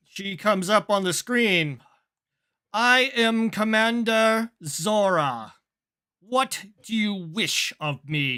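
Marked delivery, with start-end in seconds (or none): 2.7-8.4 authoritative, commanding leader's voice, one word drawn out. Commander Zora answering a channel request on screen, in a commanding voice. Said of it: "She says in a commanding voice".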